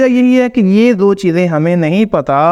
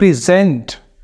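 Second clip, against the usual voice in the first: present, with stress on second syllable -sent; 2 semitones lower than usual. Teaching English word stress in Hindi: stress on second syllable of present. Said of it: "second syllable को stress करेंगे".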